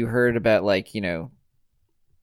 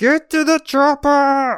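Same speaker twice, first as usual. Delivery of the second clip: high, loud, slow bellowing shout. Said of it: "you have to do it in the Arnold voice".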